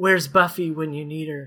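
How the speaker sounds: dying gasp, speaking with final breath. A game narrator voices a crushed man's final words: dying last breath. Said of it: "with his last breath".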